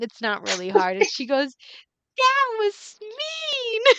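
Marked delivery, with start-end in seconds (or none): 2.2-3.8 very high, playful, teasing, lighthearted scolding, "mean" drawn out. Swatting the other character's knee, Tax says it lightheartedly. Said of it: "She like says it lightheartedly".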